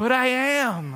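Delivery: put-on high, slow, whiny child voice.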